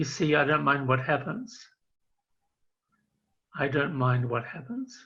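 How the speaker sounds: put-on very shy, bashful voice. Retelling what he said when asked about his secret, imitating a very shy voice. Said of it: "he said in a very shy voice".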